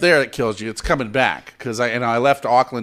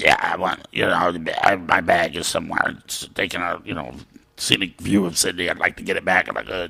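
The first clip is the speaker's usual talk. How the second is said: put-on hoarse voice; 6 semitones lower, 3 dB quieter than usual. Retelling a call to the airline after losing the voice: Nick Nolte voice. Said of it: "You have a fantastic Nick Nolte impression".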